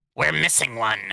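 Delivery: words growled out. Reading a story aloud, a cultist follower speaking: growled line.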